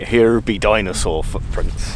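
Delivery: slow, unhurried, drawn-out West Country accent. Searching for dinosaur footprints, speaker jokes about a missing sign, West Country accent. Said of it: "In a West Country accent".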